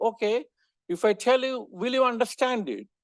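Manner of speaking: reply dripping with heavy sarcasm. Retelling a statistician's answer to a question: imitating a sarcastic reply. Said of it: "he very sarcastically responded".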